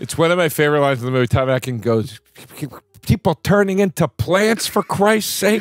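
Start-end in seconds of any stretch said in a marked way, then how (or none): 3.0-5.6 put-on angry dad voice, higher. Quoting a favourite line from the movie: imitating a mad dad, Tom Atkins. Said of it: "he's so mad about the".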